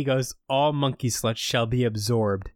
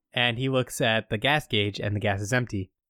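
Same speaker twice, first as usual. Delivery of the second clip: ordinary delivery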